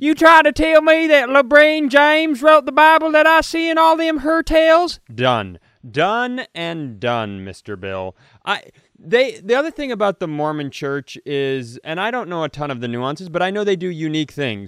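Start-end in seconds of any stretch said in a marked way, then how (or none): 0.0-5.0 very high, loud, fake put-on Southern accent. Joking after a podcast cohost asks for it: put-on Southern accent. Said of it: "if you could do it with a Southern accent".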